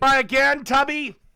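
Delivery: shrill, very high, loud yelling. Taunting the other side in a debate, yelling. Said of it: "he's yelling at".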